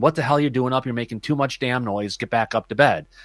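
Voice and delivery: ordinary talk, nothing marked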